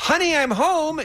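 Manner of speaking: shrill, loud, high, really sarcastic, acted out. Narrator kicks the door the rest of the way open and announces arrival: loud and sarcastic. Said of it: "in a really sarcastic tone".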